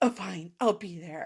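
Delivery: put-on, mock angry tone. Retelling how a book character answers during an argument: imitating an angry reply. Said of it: "angrily saying".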